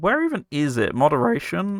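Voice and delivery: voice cracking. Streamer hunting through settings for the moderation option, voice cracking. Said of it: "That was a nice voice crack".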